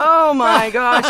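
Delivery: laughing, slow, loud laughing exclamation.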